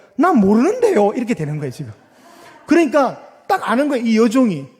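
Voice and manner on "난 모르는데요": Gyeongsang regional accent, raised and high. Speaker from Gyeongsang showing how he would say the line, Gyeongsang accent. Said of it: "저는 경상도 출신이거든요. 제가 어떻게 할까?".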